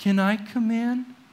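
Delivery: very pathetic, pitiful, small, self-pitying voice. Showing Colton how to ask when he goes home, very pathetic voice. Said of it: "you ask them very pathetic".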